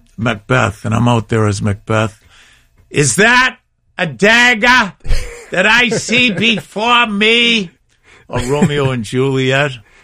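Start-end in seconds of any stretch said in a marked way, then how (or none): 2.9-7.7 put-on very high-pitched, slow Boston accent. Speaker recalling playing Macbeth on stage, in a Boston accent. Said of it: "So I had that Boston accent".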